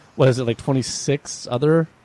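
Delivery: normal talking voice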